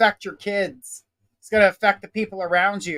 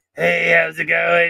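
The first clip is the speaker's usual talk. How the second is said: rough, ruffled, smoke-worn, throaty smoker's rasp; 3 semitones lower, 4 dB louder than usual. Imitating how a spirit he hears sounds coming through: chain smoker's rough throat. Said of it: "this ruffle in his throat. Like he was, like, a chain smoker".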